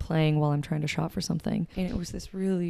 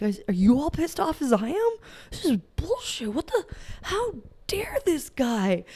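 put-on indignant, high, swooping rabble-rousing rant; 9 semitones higher than usual. Retelling overhearing a cheating confession in a store, acting out past outrage. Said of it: "like we're going to start a mob".

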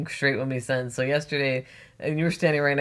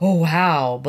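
loud, dripping, heavy sarcasm; 3 semitones higher, 8 dB louder than usual. Retelling what he said when handed a case, imitating a sarcastic remark. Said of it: "very sarcastic".

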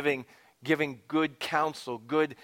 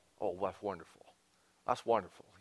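put-on southern drawl, lower and quieter; 6 semitones lower, 8 dB quieter than usual. Quoting a friend's favourite word, imitating his southern drawl. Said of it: "he says it with his southern drawl".

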